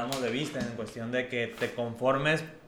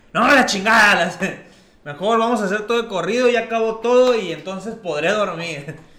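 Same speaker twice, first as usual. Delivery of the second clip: abrupt, sudden, very loud, high yelled outburst; 8 semitones higher, 11 dB louder than usual. Retelling how the other guy suddenly yelled, startling the speaker: retelling a sudden shout. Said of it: "gritó el güey y dice".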